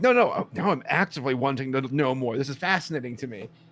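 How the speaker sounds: ordinary delivery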